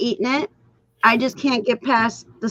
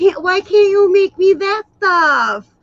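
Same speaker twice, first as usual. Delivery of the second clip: playful, needling, high-pitched teasing voice; 8 semitones higher, 3 dB louder than usual. Retelling how dad teases mom about cooking: imitating dad's teasing voice. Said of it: "that's his voice with her".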